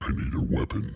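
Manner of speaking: breathy, low, whispered, hushed announcer voiceover voice. Relaying a chat request on stream, the speaker gives the line in a low voiceover voice. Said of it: "in your low voiceover voice".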